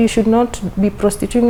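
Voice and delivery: ordinary talk, nothing marked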